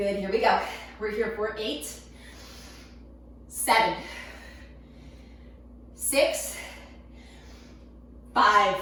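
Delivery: breathless, barely catching breath. A workout instructor counting down reps: out of breath. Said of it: "I can barely catch my breath".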